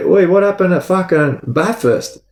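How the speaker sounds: mock high-pitched call, as if across a distance. Retelling yelling out to someone walking around the oval: retelling a yell. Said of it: "I go to yell out to him".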